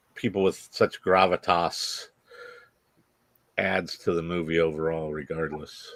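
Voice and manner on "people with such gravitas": ordinary delivery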